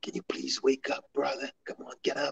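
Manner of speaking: very soft, barely audible whisper. Retelling how a brother wakes a sleeping fighter: imitating a whisper.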